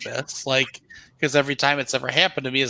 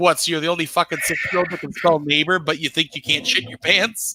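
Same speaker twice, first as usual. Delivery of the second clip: mock-exasperated put-on voice; 3 semitones higher than usual. Retelling a childhood story, the speaker imitates their exasperated mom's reaction. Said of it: "because she's exactly who my mother is".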